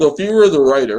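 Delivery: very loud talk through a mouthful of food. Starting a question to the others, talking with food in mouth. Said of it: "I got food in my mouth".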